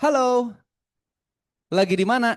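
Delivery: cheerful, smiling tone, pitch rising on halo. Demonstrating for the audience how to say hello, smiling hello, rising tone. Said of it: "Halo, sambil senyum boleh?".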